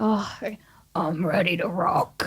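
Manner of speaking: voice dropped very low. Asked to get the voice real low and say the line, very low voice. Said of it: "can you get your voice real low".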